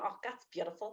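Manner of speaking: put-on very hushed Belfast accent. The speaker quotes what their mother was saying: imitating mother in Belfast accent. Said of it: "That's what she was saying".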